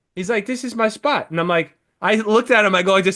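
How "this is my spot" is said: put-on Polish accent. Retelling a man's words to the speaker: polish accent. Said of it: "like a fucking Polish accent".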